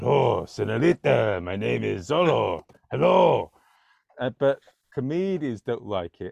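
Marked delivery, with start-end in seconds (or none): 0.0-3.5 slow, exaggerated, put-on Spanish accent. Performing a self-described bad impression: exaggerated Zorro accent. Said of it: "I put on the voice and I say".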